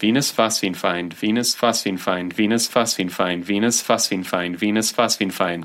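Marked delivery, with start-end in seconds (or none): none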